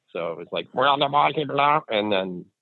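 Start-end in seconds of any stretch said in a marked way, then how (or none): 0.8-1.8 high-pitched quacking duck chatter. Describing noises heard before each event, the speaker does a duck chatter impression. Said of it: "That's a really good impression".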